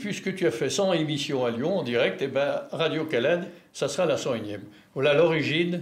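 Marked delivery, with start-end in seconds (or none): none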